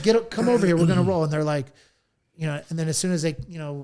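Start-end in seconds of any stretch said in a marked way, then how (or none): 0.0-1.2 rough, gruff, loud barked voice. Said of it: "I'll say it kind of in a gruff".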